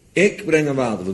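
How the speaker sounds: main stress placed hard on ik. Quoting a line about bringing the flood after the ark, stress on ik. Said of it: "Met de nadruk op ik".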